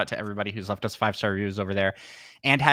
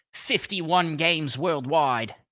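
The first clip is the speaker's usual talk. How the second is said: fake, off-target, bad put-on Australian accent. Speaking under time pressure, then asking others to judge it; bad australian accent. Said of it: "Is that is that a good Australian accent?".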